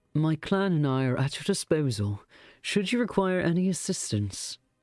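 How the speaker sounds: put-on faint, slight, half-hearted British accent. Voicing a character in the story, the narrator uses a slight British accent. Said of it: "I'm like kind of doing a British accent".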